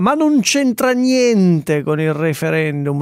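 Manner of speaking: firm stress on NON.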